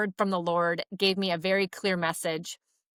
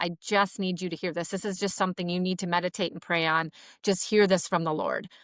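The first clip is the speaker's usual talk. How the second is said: put-on emotional, almost teary voice. Retelling what a woman said the third time, imitating her almost teary plea. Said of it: "she was almost teary-eyed".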